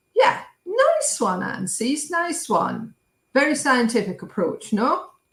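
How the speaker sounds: heavily sarcastic, high, sing-song praising tone. Commenting on an appeal against the Court of Justice: sarcastic. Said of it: "that was hashtag sarcasm".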